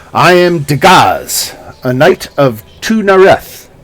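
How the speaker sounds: haughty, lofty, slow proclaiming tone. Narrating a fantasy game, voicing the Githyanki knight Dagaz in a haughty tone. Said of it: "she says in a haughty tone".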